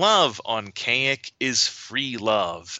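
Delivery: slow, nasally put-on voice. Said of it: "in a very nasally voice".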